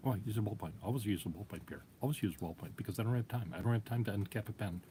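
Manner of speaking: fast, choppy, staccato bursts of speech. Retelling a man's answer to Pierre about his pen, imitating a quick, somewhat staccato talker. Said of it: "He talks very quickly um, and somewhat in a staccato voice like that".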